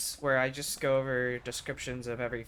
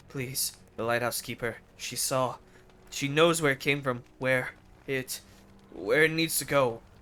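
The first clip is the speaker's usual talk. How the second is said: falling to a whisper, holding back tears; 4 dB louder than usual. Reading a story, a man pleads as he holds back tears: falling to a whisper. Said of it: "His voice falls to a whisper".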